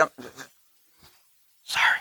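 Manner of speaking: quick, hushed, under-the-breath whispered sorry. Acting out a quick apology to those closest: imitating a whispered apology. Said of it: "You're, like, whispering".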